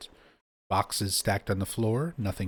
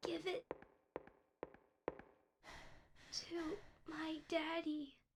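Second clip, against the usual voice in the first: ghostly voice, higher and quieter; 19 dB quieter than usual. Speaking as a ghost heard on the way downstairs: ghostly voice of Amy Baldwin. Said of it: "the ghostly voice of Amy Baldwin".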